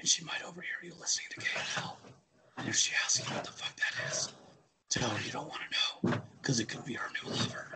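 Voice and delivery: soft, breathy whisper under the breath. Addressing a listener whose wife might be awake right now: whispering. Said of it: "The reason I'm whispering".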